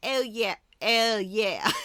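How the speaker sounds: loud, very slow put-on British accent. Retelling how someone replied about board games, in a put-on British accent. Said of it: "but all British".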